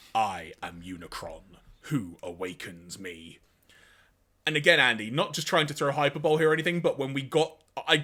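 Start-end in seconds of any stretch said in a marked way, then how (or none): 0.1-3.4 very deep, slow, level, drawn-out voice. Retelling a cartoon scene, quoting the reawakened head: deep Unicron voice. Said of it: "a familiar deep voice".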